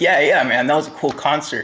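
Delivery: ordinary delivery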